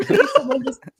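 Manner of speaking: high, laughing, teary pleading voice.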